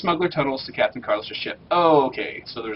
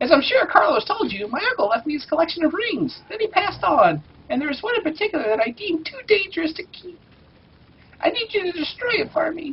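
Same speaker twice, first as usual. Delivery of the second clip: put-on cartoon kid voice, higher. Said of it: "the Phineas voice".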